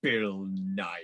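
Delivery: acted, extremely venomous and bitter tone. Retelling a friend's reply about who got the role, imitating a venomous tone. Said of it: "in the most venomous tone of voice".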